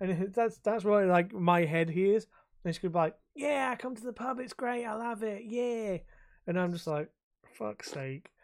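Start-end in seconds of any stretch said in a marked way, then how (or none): 3.3-6.0 put-on broad Cockney accent, laid on thick, pitched up. Describing how a woman with a thick London accent talks: imitating a thick Londoner accent. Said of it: "such a thick Londoner accent".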